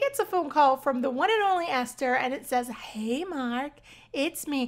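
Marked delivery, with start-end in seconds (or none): 2.7-4.7 very slow, very drawn-out sultry voice. Retelling a phone call from a woman, imitating Esther's sultry voice. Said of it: "she's using that sultry voice".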